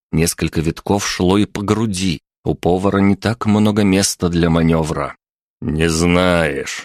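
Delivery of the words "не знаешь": contemptuous, scornful tone at much lower pitch. Pavel questioning the cook tied to a chair, contemptuous. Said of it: "презрительно произнес Павел".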